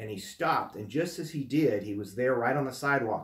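ordinary talk

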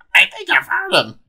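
put-on very high old lady smoker voice. Recalling how the other speaker first voiced an end-credit scene, old lady smoker voice. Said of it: "like an old lady smoker voice".

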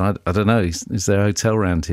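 ordinary talk, nothing marked

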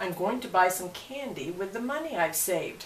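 ordinary delivery, nothing marked

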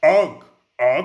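caveman voice with grunts.

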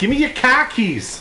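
Boston accent, high-pitched.

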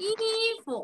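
second syllable 服 short, light, unstressed, neutral tone. Pronunciation practice, modeling 衣服 with neutral tone on 服. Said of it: "服轻声".

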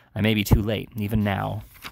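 ordinary delivery

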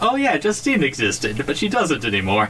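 high-pitched mock Japanese accent.

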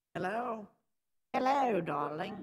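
put-on British accent. Trying a voice for fun on a stream phone call, Vivian voice, put-on British accent. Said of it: "I'm going to try to do Vivian, but it's a British accent".

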